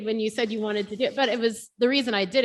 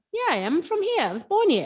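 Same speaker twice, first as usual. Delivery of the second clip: put-on own voice slipping into high, swooping Australian accent; 8 semitones higher than usual. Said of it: "I sound like an Aussie".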